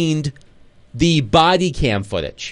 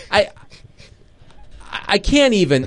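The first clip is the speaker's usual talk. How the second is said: speechless stammering, slightly higher pitch; 4 semitones higher than usual. Reacting to a reporter's lie, stammering and at a loss for words. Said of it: "You can't get the words out".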